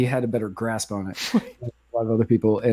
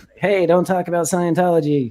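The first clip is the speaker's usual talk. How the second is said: high, squeaky elf voice; 7 semitones higher than usual. Imagining Tom Cruise at the door, talking like an elf. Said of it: "I assume he talks like an elf".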